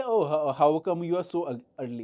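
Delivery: sarcastic, taunting tone. Explaining sarcasm, the speaker mocks someone who arrived late, taunting tone. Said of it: "with a taunting tone".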